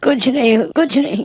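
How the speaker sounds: sobbing. Mir answers a friend who asks why he is crying, crying. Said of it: "तुम यहाँ बैठे जोर से रो रहे हो।".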